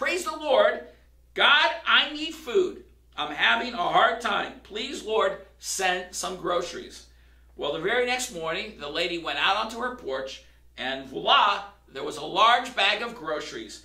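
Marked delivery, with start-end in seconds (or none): 0.0-7.1 loud, shouted, pleading yell. Telling a story, a lady on her porch calls to God, retelling a yelled plea. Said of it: "she yelled out".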